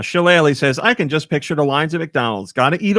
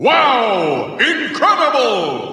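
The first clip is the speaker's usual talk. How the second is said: higher put-on game announcer voice; 10 semitones higher than usual. Asked to do the Smash Brothers announcer saying wow: Smash Brothers announcer voice. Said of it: "Start with the Smash Brothers one".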